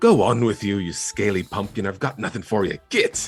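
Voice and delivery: mildly aggressive voice. Voicing the drow shooing away a small dragon: mildly aggressive drow voice. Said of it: "a mildly aggressive".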